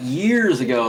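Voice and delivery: heavy, drawn-out stress on "years ago". Explaining how emphasis changes how long ago means: emphasis on years ago. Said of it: "put emphasis like years ago".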